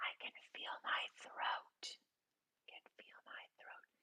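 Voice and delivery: whispering. Instructor leading a group to repeat lines after them, whispering. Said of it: "When I whisper".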